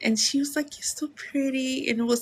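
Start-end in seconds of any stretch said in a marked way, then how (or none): 0.8-1.9 bashful, feminine, sweet, very soft, shy voice. Retelling a compliment from a stranger in a sweet, soft, shy voice. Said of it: "in a very sweet, very soft, very feminine, shy voice".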